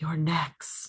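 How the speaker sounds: gentle, soft, quiet whisper. Voicing a voice heard as the players slowly wake: soft whisper. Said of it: "you will hear a soft whisper going".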